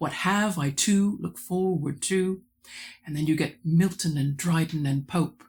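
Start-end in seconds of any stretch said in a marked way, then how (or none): 0.0-2.4 alternating unstressed and stressed syllables, iambic across whole line. Discussing poetry, reading a line in iambic: iambic weak-strong beat. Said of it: "If you read that in iambic".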